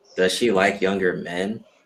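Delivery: ordinary delivery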